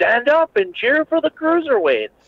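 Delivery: acted very high, swooping arena hype scream. Retelling what was shouted into the microphone at the crowd: imitating someone screaming. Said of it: "they're screaming in the microphone".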